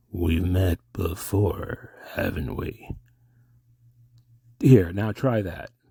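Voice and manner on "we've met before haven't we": slow delivery with every word drawn out. Showing another speaker a better Mystery Man impression from Lost Highway. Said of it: "I'll do an impression of you better in Lost Highway".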